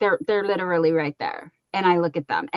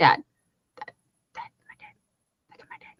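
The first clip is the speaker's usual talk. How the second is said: squeaky, very high little pet-dog voice; 5 dB quieter than usual. Showing a dog wanting a snuggle and voicing the dog Bella. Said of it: "She's like".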